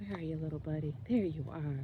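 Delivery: soft, gentle, hushed coaxing tone.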